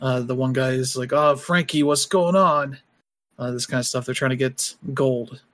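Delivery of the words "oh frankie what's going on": put-on Brooklyn-accented tooth fairy voice. Describing a comedy's flying tooth fairies, the speaker quotes one in a Brooklyn accent. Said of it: "they have very Brooklyn accents".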